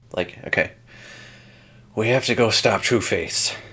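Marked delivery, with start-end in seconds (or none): 2.0-3.6 overdone tough-guy delivery on giant, burdened exhale. Imitating an actor playing Jim Gordon, finishing the line on a giant exhale. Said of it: "finishing every line on a giant exhale".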